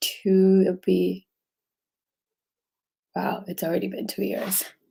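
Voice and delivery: soft voice with an emotional catch. Talking about sharing openly since their dad died; getting emotional. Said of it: "I always get emotional when I talk about my dad".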